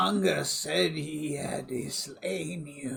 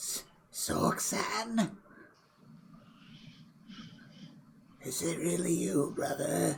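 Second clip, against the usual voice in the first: raspy, hoarse, breathy near-whisper; 5 dB quieter than usual. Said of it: "His voice sounds hoarse".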